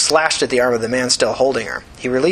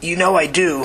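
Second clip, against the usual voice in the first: scared, frightened, fearful tone; 5 semitones higher than usual. Narrating, the old man Tina holds answers a friend; scared voice. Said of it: "in a scared voice".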